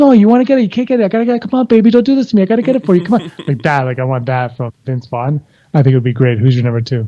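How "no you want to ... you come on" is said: slimy, sleazy hard-sell salesman patter, pitched up. Pitching a cameo idea, the speaker acts out a sleazy car salesman voice. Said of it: "like he's just like a sleazy car salesman".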